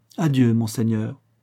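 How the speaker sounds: ordinary delivery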